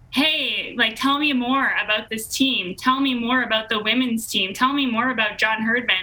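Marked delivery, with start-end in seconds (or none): none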